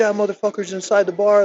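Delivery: mock yell. Retelling a confrontation with police, imitating a man yelling. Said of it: "He's, like, yelling".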